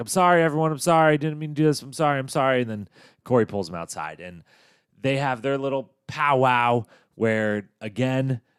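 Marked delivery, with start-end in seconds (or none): 0.0-2.6 loud, rushed, hurried yelling. Retelling a man's outburst to a group in the kitchen: imitating someone yelling an apology. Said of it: "just yells like".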